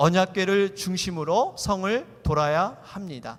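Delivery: reading together, slowly.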